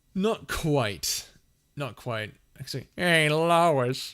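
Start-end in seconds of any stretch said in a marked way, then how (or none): 3.0-4.2 loud, high cartoon voice, belted hey, long-stretched name. Asked whether they can do a Peter Griffin: Peter Griffin voice. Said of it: "Can you do a Peter Griffin? ... that's pretty much all I can do".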